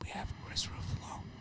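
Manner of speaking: hushed, whispered golf-commentator voice. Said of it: "Why are we whispering?".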